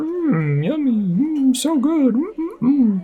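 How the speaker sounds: play-acted very high, slow, drawn-out yummy mms. Mocking how humans sound when they eat: imitating humans savoring food. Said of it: "It's a good impression".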